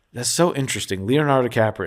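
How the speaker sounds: ordinary talk, nothing marked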